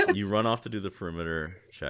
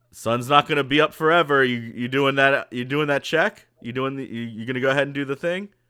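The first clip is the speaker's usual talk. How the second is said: stern yell, louder, much higher, faster; 8 semitones higher, 10 dB louder than usual. Voicing Paprika calling out to a player's character: Paprika, stern and louder. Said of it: "Paprika's voice get just a little bit stern and louder".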